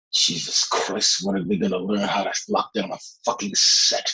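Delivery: breathy, hushed near-whisper, under the breath. Retelling a remark heard in a quiet room on set after a clang, almost in a whisper. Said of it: "you hear Jessica almost in a whisper".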